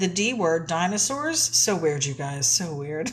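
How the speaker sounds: plain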